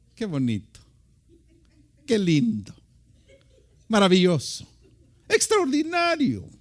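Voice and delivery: loud, sing-song, sarcastic tone throughout. Showing listeners how sarcasm sounds: sarcastic tone. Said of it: "¿Sabe usted cómo es el sarcasmo?".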